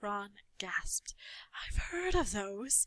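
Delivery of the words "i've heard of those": hushed, soft voice. Reading a story aloud, a character gasps at an unwrapped parcel, in a hushed voice. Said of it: "he said in a hushed voice".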